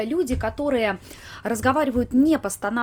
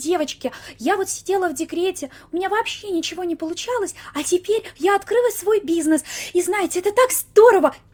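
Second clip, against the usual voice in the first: high, squeaky, breathy mommy voice; 7 semitones higher than usual. Speaker imitates bloggers who sell products as mothers, in a breathy, squeaky mommy voice. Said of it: "Тут и придыхание, и голос писклявый".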